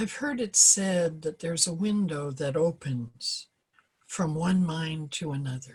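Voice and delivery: slow reading with long pauses. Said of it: "I'm gonna read it slowly".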